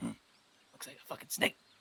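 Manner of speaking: gravelly little imp voice. Voicing an imp speaking in a character's head: imp voice. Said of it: "you hear the imp just kinda, like, in your head, just kinda go like".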